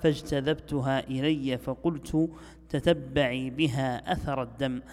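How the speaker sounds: ordinary talk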